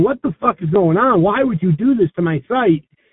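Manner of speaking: plain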